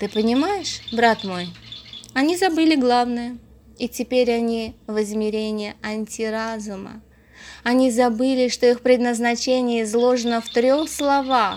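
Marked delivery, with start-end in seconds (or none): none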